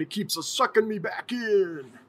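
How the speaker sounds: put-on Italian mobster accent. Talking about Mile High coming back, quoting the movie in The Godfather accent. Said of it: "that was a good accent".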